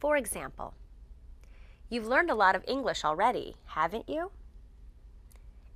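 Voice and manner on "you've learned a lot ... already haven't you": rising tune at the end of haven't you. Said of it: "We use upward intonation for these questions".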